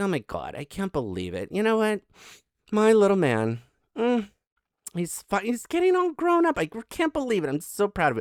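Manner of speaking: high, swooping, gushing, doting proud-mommy voice. Voicing a woman watching him, as a put-on proud mommy. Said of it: "this is the look of a proud mommy".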